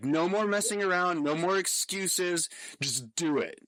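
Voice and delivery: mock forceful, stern voice, loud and high. Recounting a private talk, the speaker imitates a fellow former college athlete's loud voice. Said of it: "he has like this really loud voice".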